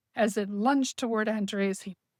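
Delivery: ordinary delivery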